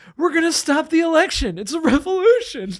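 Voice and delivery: very high-pitched, weepy crying voice. Retelling a woman's answer when asked why she stormed the Capitol, imitating someone crying. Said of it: "And she's crying".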